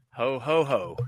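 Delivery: emphasis on middle "ho". Group asked to say ho ho ho; one answers with stress on the second ho. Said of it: "I like the emphasis on the second one".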